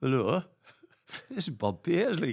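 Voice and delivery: put-on, sing-song Geordie accent. Acting out a caller after the phone rings, imitating a Geordie accent. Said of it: "Geordie accent".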